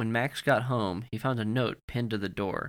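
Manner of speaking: ordinary delivery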